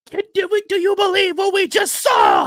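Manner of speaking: very high, loud, swooping sports commentator voice. Suggesting a comeback line to the commentator: impression of the commentator. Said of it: "an impression of him".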